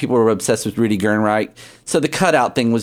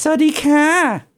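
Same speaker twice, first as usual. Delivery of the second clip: put-on very high, nasal, girly voice on ka. Showing how a queen would say hello in thai, nasal feminine voice. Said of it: "It's got this nasal kind of".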